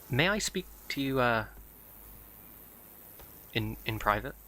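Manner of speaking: hushed character whisper. Voicing Graal as he cautiously approaches someone, in Graal's whisper. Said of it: "he kind of whispers".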